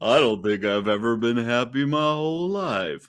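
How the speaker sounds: all mopey and glum. Continuing to imitate Sean's gloomy reply: Eeyore-like voice. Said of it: "said it very Eeyore-like".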